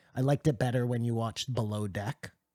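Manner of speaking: normal talking voice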